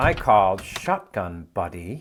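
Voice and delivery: slow, steely, unbudging tone. Retelling what people say when their car seat is taken: imitating someone steely. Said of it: "look at you with that steely expression on their face and say".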